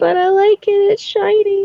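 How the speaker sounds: very high-pitched voice, almost crying. Playing a character who almost has tears in her eyes: near tears. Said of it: "has tears in her eyes".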